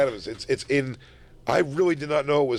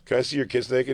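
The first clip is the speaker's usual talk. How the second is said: usual speaking voice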